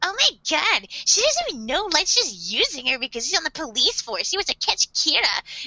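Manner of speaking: put-on loud ranting voice. Retelling a character blurting a secret across a hallway: imitating a loud spiel. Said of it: "goes on this fucking loud-ass spiel".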